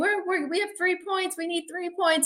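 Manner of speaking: mock screaming, pitched way up, stumbling. Retelling a son's phone call during the game: imitating George screaming. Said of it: "he's screaming".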